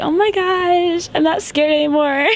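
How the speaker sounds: put-on high, over-the-top girly voice, "gosh" drawn out.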